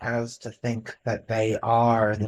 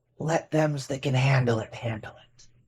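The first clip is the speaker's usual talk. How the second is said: hushed, low-voiced murmur under the breath; 2 semitones higher, 6 dB quieter than usual. Playing Belle, who pats a companion's arm and answers, in a low voice. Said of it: "And in a low voice".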